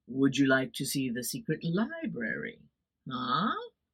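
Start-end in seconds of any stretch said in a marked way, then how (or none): 0.1-2.6 deep, grave, possibly ominous tone. Retelling a monk walking up to the ladies outside; imitating the monk's deep tone. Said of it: "in a deep and possibly ominous tone".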